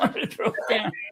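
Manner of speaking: high-pitched, laughing through the words.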